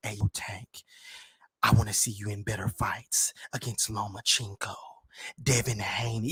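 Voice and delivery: breathy whisper, barely voiced, very quiet. Imitating a podcaster who always seems to whisper when talking: imitating Gillie whispering. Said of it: "be whispering when he be talking all the time".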